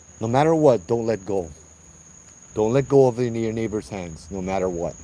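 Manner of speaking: plain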